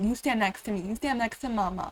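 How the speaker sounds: ordinary talk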